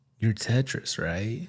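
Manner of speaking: put-on dazed, spaced-out, spacey voice. Retelling how the listener greeted them when introduced as a DJ, imitating a stoned spacey voice. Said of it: "Was high on shrooms or something?".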